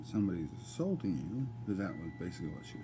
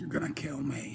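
put-on growly teen voice, pitched up; 6 semitones higher than usual. The speaker retells what she said about the sleeping arrangements: imitating a growly teenager voice. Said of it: "doing it with that growly teenager voice".

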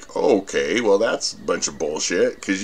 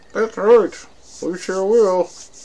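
very high-pitched ventriloquist dog voice; 10 semitones higher than usual. Talking to the puppy, then answering for it in a ventriloquist voice. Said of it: "I'm getting good at ventriloquizing".

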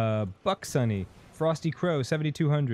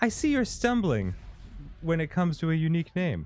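higher, eager, overly helpful assistant voice; 5 semitones higher than usual. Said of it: "You were like Clippy".

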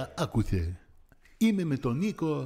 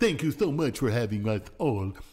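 very low, deep, dopey cartoon moose voice; 7 semitones lower than usual. Wrapping up as a guest on the show, thanking everyone: Bullwinkle voice. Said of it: "Bullwinkle says".

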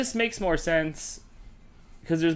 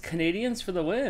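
usual speaking voice

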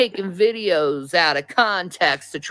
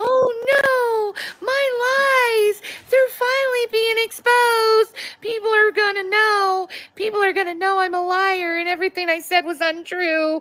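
mocking put-on voice, much higher pitched. Responding to a woman who called them out, mocking impersonation. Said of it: "Off your butt, like".

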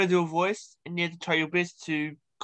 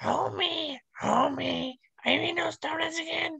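put-on cartoon voice, very high-pitched with rasp; 12 semitones higher, 4 dB quieter than usual. Doing a voice for the other speaker to guess: Marge Simpson voice. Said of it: "that's Marge".

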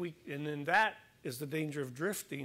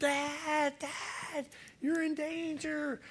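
mock very high, drawn-out child's scream; 12 semitones higher than usual. Retelling how a son screamed from shore during a storm: imitating Zach screaming. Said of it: "he started screaming".

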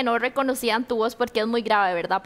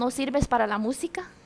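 plain

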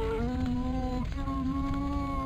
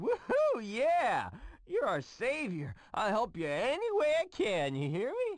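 put-on tipsy, boozy, drunk-sounding whooping voice. Thanking a rescuer who saved him, sounding drunk. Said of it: "I don't know why [name] sounds drunk".

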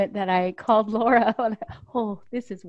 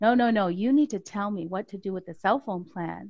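mock-stern, stern tone. Retelling how her husband pressed her again, imitating him pretty sternly. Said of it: "pretty sternly".

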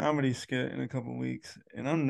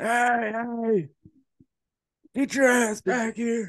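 very high, loud, shrieking scream; 10 semitones higher, 7 dB louder than usual. Chasing a departing car on foot in a theater parking lot, retelling own screaming. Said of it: "screaming like".

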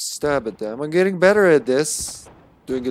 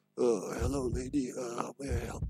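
gruff superhero voice, quieter and slower; 13 dB quieter than usual. Playing the game character David, greeting a lady: Batman voice. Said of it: "He's with his Batman voice".

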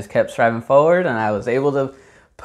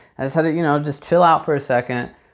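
ordinary talk, nothing marked

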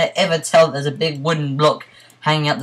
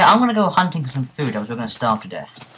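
ordinary talk, nothing marked

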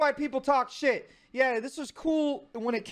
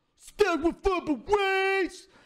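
put-on mumbling tough-guy voice, higher; 4 semitones higher than usual. Watching an old clip of himself and repeating the line: imitating own Sylvester Stallone–like delivery. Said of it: "I sound like, uh, Sylvester Stallone in Rocky".

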